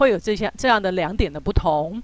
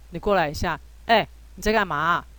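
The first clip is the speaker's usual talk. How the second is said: rude, brusque, curt, impolite tone; 3 semitones lower than usual. Showing how to call someone over impolitely: curt, impolite tone. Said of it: "用一种比较不客气、不礼貌的口气去叫别人的时候呢，说就是这样子".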